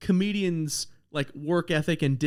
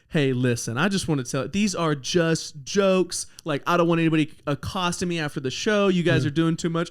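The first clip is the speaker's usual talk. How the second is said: usual speaking voice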